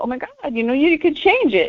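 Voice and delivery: put-on swooping Valley Girl voice. Showing how she talks to a valley girl: imitating a valley girl. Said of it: "Valley Girl".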